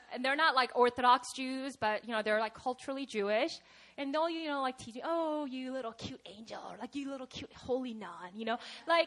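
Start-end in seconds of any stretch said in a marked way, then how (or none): 5.0-8.3 very quiet, hushed, needling, mocking tease. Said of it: "like mockingly".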